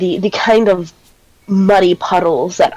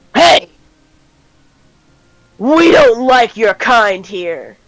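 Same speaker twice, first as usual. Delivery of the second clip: very gruff, coarse, heavy, rough voice; 3 semitones higher than usual. The storyteller voices a large man confronting the group, very gruff voice. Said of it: "says uh, a very gruff voice".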